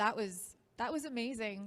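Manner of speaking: emotional, choked-up, catching voice. Thanking an audience after hearing stories of changed lives: choked up with emotion. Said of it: "I'm choked up".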